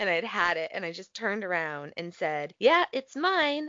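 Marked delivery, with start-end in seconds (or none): 2.6-3.7 mock rude, very high-pitched voice. Speaker retells answering a man who yelled about a handicap spot: retelling a rude reply. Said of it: "kind of rudely".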